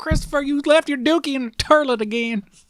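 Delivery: put-on Texan twang, pitched very high. Joking about finding a snake in the toilet: put-on Texan accent. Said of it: "I'm literally turning, like, Texan on you here".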